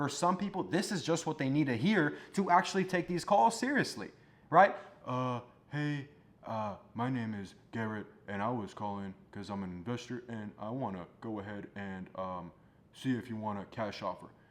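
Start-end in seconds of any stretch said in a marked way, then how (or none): 5.1-14.3 very low, flat, halting, hesitant monotone delivery. Imitating a new entrepreneur on a sales call: imitating a monotone, hesitant caller. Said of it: "You sound monotone".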